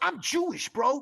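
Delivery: high emotional outburst. Retelling what a man said to him about a video, acting out an emotional outburst. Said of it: "he was like really emotional".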